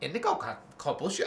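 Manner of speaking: fast, quick bird-talk parrot voice. Trying again to say a phrase the way a parrot would, parrot voice. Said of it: "I can't speak parrot very well".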